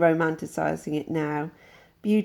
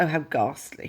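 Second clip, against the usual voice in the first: fake upper-crust posh accent. Reacting to a quoted description of tiles and neon, put-on posh accent. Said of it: "sorry, I was doing a posh accent there. That wasn't really me".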